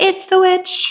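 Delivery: put-on very high, childish little voice. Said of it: "It sounds like".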